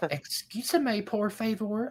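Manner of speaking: very high, slow, stretched-out cartoon voice. Imagining speaking Spanish to someone, the speaker talks in a Peggy Hill voice. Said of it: "I'll be like Peggy Hill from King of the Hill".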